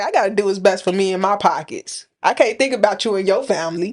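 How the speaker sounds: plain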